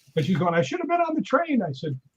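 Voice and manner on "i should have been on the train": put-on scared, upset woman's voice, higher pitch. Retelling a joke about a woman boarding an airplane: imitating a scared, upset woman. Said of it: "She was really scared".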